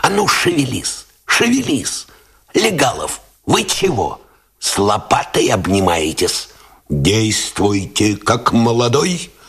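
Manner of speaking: high whisper. Narrator reads a lieutenant commanding his soldiers at a firing position, in a whisper. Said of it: "командовал шепотом".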